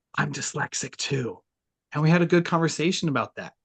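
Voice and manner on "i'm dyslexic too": soft, hushed whisper under the breath. Retelling how a client at a networking event confided: retelling a whisper. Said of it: "leans in and whispers to me".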